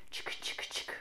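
soft, whispered chick-chick chugging sound. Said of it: "Can you make that sound with your mouth?".

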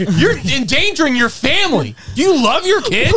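put-on very high, slow, drawn-out aggressive yelling. Retelling how they kept going at her, imitating someone yelling at her. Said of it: "we do thirty minutes of just yelling at her".

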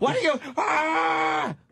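mock high, raspy angry yell, "ah" dragged out. Retelling their mother's angry outbursts: imitating mother yelling angrily. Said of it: "she'd get mad and go".

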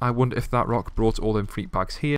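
ordinary delivery

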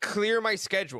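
ordinary talk, nothing marked

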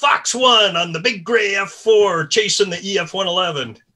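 mock happy, excited voice. Retelling a pilot's radio call heard on the frequency: imitating a happy excited voice. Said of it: "I hear this really happy voice".

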